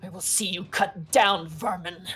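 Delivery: hostile knight voice, growled snarl. Game master voicing an opponent who has just parried the player's blow, snarling. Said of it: "he kind of snarls at you".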